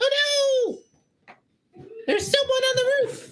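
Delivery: tiny, very high voices crying out and yelling. Storyteller voices people inside a cart calling out, tiny little voices yelling. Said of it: "you hear tiny little voices from inside yelling out".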